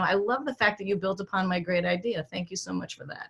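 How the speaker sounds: put-on kindly, gentle, pleasant tone. Retelling a reply to someone who repeated the idea: retelling in a pleasant gentle voice. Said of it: "much more pleasant, but then a gentle voice".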